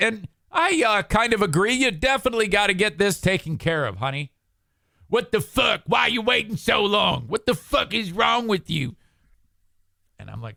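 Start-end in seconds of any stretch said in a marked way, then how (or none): 5.1-9.0 put-on yelling, pitched higher. Retelling a brother scolding his sister on speakerphone: imitating someone yelling. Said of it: "while he's yelling at his sister".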